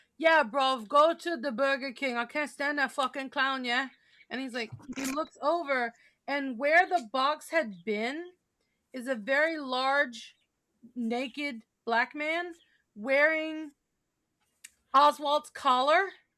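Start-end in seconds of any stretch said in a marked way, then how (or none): 0.2-3.9 put-on very strong, thick London Cockney accent. Retelling a story where a voice speaks from the passenger seat: Cockney accent. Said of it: "a very Cockney accent comes from the passenger seat".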